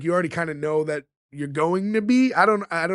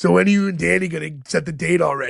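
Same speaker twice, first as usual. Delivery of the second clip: deep, raspy put-on voice. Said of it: "doing a Harvey Firestone impersonation".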